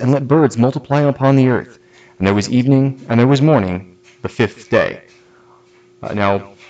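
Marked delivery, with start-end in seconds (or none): none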